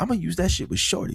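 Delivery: hushed whisper. Because she might be home, the speaker keeps whispering. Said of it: "I'm whispering because she might be home".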